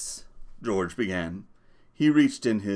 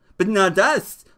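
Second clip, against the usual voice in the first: gleeful, happy cry, very high and loud; 9 semitones higher, 6 dB louder than usual. Reading a story, one man answers another, crying out happily. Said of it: "Lenny cried happily".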